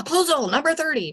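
shrill, very high, robotic machine scream. Recalling how the old scanners spoke: imitating a screaming automated voice. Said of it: "scream at you with this automated voice".

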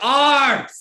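very high, very loud, shrill coach yell. Imitating a Russian woman coaching in the rink: imitating a loud Russian coach. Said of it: "a Russian woman coaching in the rink".

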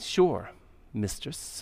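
deepened, breathy, hushed near-whisper with bass. Retelling a servant answering her mistress: imitating a servant's resentful deeper voice. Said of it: "she starts to put a little bit of bass in her voice".

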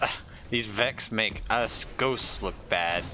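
normal talking voice

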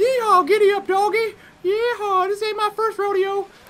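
high-pitched cowboy-style voice. Voicing Sideswipe riding around on Ravage, the speaker uses a Sideswipe high voice. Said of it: "or a high voice".

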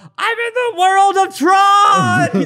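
play-acted ecstatic yell, very high, very slow, drawn-out. Recalling a Tron event, speaker retells how his companion yelled, retelling an excited yell. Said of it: "he yells".

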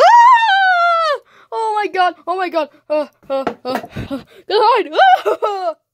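high, swooping, frantic screaming, "ah" stretched out. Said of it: "I'm just gonna freak out like a crazy".

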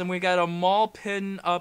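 really slow, deliberate read-out.

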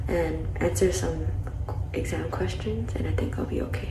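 soft, very quiet whisper.

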